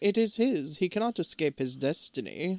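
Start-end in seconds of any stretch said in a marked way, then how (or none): none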